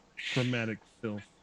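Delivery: muttered under breath. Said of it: "She says under her breath".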